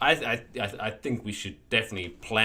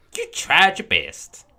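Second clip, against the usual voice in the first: loud, slow consoling mock folksy twang. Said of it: "I don't know why I do that accent".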